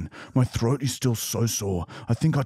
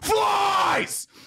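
mock very high, shrill, furious shriek. Retelling answering a waiter who asked what was wrong: imitating own scream. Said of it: "I just kept screaming".

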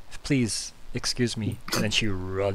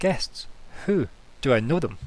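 a bit excited, eager and keen-sounding; 4 semitones higher, 3 dB louder than usual. Voicing a character who hears there are guests: a bit excited. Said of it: "she kinda gets a bit excited".

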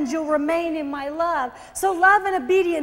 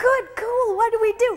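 put-on cheerful, eager little-kid voice, pitched up; 6 semitones higher than usual. Retelling her own past words as a happy little kid. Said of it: "I'm just this little kid, like, I'm just, just happy".

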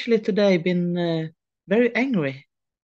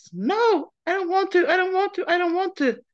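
put-on very high, pleading, desperate child voice; 12 semitones higher than usual. Recalling speaking out loud to oneself, imitating a desperate childish voice. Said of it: "in this desperate childish voice".

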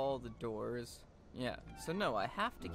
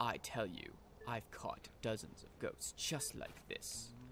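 snooty, sophisticated, hushed refined voice; 5 dB quieter than usual. Voicing a game character answering a question, in a snobby sophisticated voice. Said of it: "he's more sophisticated, ... I feel like he should be like more snobby".

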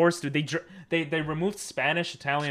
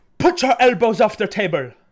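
very loud, high, terrible put-on Jamaican accent; 7 semitones higher, 9 dB louder than usual. Quoting the speaker's eighth-grade teacher about elbows at the table: terrible jamaican accent. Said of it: "that was a terrible Jamaican accent".

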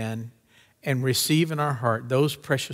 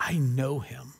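put-on passionate conviction, quieter and slower; 4 dB quieter than usual. Retelling a movie's greatest moment, a man looks another in the face: retelling a passionate line. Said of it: "with the most passionate moment".

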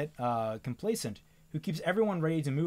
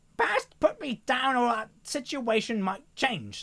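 strained, effortful, pitched-up voice; 8 semitones higher, 4 dB louder than usual. Reading a story aloud, a character held up and struggling: strained voice. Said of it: "Slate said in a strained voice".

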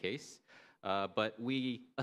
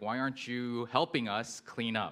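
usual speaking voice

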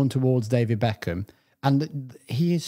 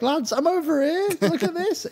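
put-on overjoyed voice, pitched higher. Imitating Keegan waving at the players: imitating Keegan being so happy. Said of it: "He's just so happy".

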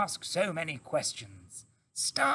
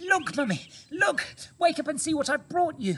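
high, loud cry, out of breath; 9 semitones higher, 5 dB louder than usual. Narrator reads a young fox bursting in on his mother after a long run, crying out, out of breath. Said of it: "he cried, out of breath".

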